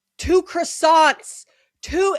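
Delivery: play-acted, shrill screaming as loud as possible. Retelling a family trip to Paris, imitating mom screaming at a person. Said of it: "my mom is just screaming at the person".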